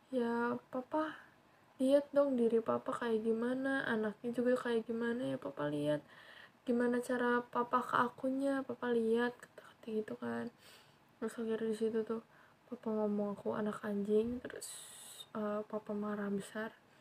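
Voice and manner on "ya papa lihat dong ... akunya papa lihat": ordinary talk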